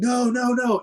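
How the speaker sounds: mock very high, shrieked no. Telling a story, acting out the guys from the boat screaming at him: retelling people screaming no. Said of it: "they started screaming".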